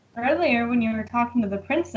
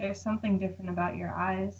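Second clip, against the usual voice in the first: very quiet murmur under the breath; 3 semitones lower, 11 dB quieter than usual. Walking over to the commander and speaking only to him; muttered under breath. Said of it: "under my breath".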